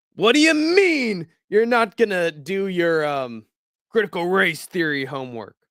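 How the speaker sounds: high, drawn-out scolding father voice. Doing an impression on request of Chandler scolding his children: Chandler impression. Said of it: "Do an impression of Chandler walking in on his children".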